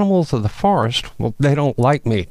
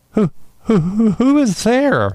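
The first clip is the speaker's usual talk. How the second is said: very high, trembling, shivering-cold voice; 9 semitones higher than usual. A narrator reads a lost deer's question to an unseen voice above, shivering.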